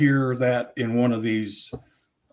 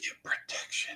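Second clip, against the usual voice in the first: whispered. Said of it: "but he's whispering it".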